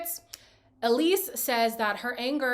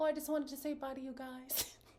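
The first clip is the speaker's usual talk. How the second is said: very soft, quiet, feigned innocent tone; 3 semitones higher, 12 dB quieter than usual. Retelling a cast member walking in on an argument: imitating feigned ignorance. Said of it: "he's just feigning ignorance".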